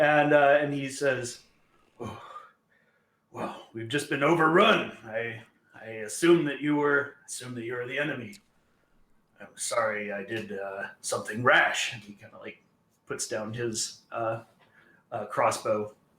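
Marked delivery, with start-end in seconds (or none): 2.0-11.9 edgy, on edge. Voicing a ranger who apologizes for attacking: edgy. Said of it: "just very edgy".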